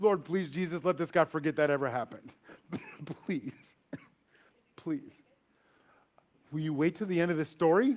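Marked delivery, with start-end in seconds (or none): 0.0-5.1 desperate pleading, lower and quieter. Retelling praying in a car while waiting for a cop: imitating own desperate prayer. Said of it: "I was praying to God right in front of my friend Tommy".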